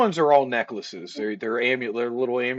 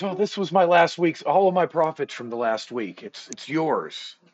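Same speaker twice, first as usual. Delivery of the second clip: fast, eager, excited character voice; 4 semitones higher than usual. Voicing an NPC running over to the party: excited NPC. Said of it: "he excitedly throws a bag down on the table".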